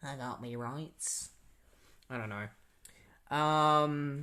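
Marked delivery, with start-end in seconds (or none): 0.0-1.3 very quiet, British-sounding put-on accent. Repeating a man's line while discussing how his accent comes off: British-sounding put-on accent. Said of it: "more of like a British way of speaking".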